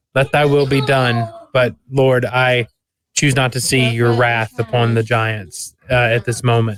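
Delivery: ordinary talk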